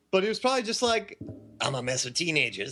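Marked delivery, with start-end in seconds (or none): 1.6-2.7 put-on horror movie slasher villain voice. Imitating the horror movie killer's thinking: Freddy Krueger voice. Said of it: "That's my best Freddy".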